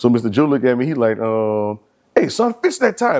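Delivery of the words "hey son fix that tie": very high-pitched, loud, raised commanding voice. Retelling a teacher's remark on a first day: imitating a teacher saying it loud. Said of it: "But he said it a little loud".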